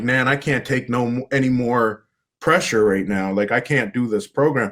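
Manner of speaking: acted tearful voice. Retelling phoning their grandmother about a program they couldn't handle; retelling own crying. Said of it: "And I'm crying".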